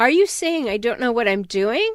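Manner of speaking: ordinary delivery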